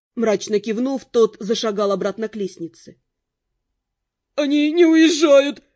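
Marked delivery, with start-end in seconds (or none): 4.4-5.6 very loud, frightened, scared voice. A footman at the window reports to the others, frightened. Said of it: "испуганно сообщил".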